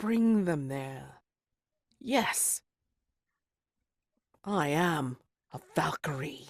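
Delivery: fiery, heated, proud, fervent delivery. Wisp, with something pressed near her neck, answers her questioner: proud and fervent. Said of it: "she says it with like such pride, such heat, such fervor".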